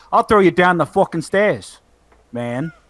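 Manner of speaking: fake thick Italian New York accent. Imitating someone from a video, in a thick Italian New York voice. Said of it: "that thick Italian, like, New York thing going on with his voice".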